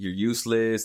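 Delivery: normal talking voice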